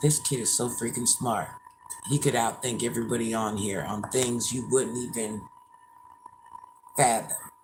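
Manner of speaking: voice brought down, low and quiet. Speaker lowers their voice partway through a story, lowered voice. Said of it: "Let me lower my voice".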